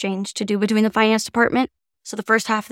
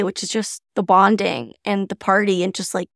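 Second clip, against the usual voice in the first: plain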